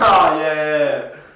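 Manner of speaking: loud, drawn-out, forced, fake-sounding laugh. Asked by another speaker to demonstrate his date fake laugh: imitating his own fake laugh. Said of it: "can you give us an impersonation of the fake laugh?".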